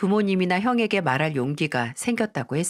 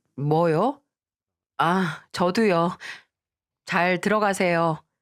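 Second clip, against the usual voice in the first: slow, flat, terse, blunt and unfriendly delivery. Retelling phone calls to her mother-in-law, acting out a curt, blunt tone. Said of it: "엄청 무뚝뚝하게 말했어요 / 이렇게 세상 무뚝뚝한 어조로".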